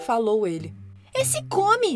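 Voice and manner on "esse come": shrill, high, emphatic exclamation. Reading a children's story, the narrator voices the girl's reply to her father, exclaiming. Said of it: "Exclamou a menina".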